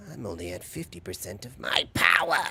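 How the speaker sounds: loud, quick, lilting villain voice with feminine lilt. Trying out an impression while discussing how the character sounds, Frieza voice with a female lilt. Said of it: "more of a female lilt to it".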